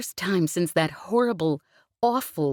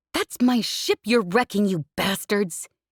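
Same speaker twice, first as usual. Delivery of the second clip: growled, higher pitch; 4 semitones higher than usual. She turns on the smugglers who are wrecking her ship, growled. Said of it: "she growled".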